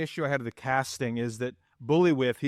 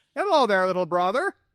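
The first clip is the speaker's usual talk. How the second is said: loud, high-pitched, put-on Scandinavian accent; 7 semitones higher, 5 dB louder than usual. Describing a film's characters, quoting Herger in a Scandinavian accent. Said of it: "I can't do the Scandinavian voice right".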